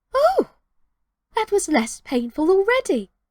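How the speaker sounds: delighted exclamation. Reading a story, a character finds walking less painful: exclaiming joyfully. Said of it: "she exclaimed joyfully".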